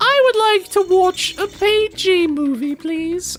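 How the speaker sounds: put-on British accent, very high-pitched and slow. Retelling own childhood reply to friends about movies: put-on british accent. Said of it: "I don't know why I went British there".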